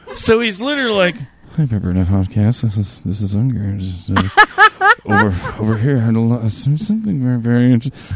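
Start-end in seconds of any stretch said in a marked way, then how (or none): 1.5-8.1 stumbling, halting, hesitant rambling. Retelling a listener's message: imitating a quiet voice in a tent. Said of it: "he sounds like he's in a fucking pup tent".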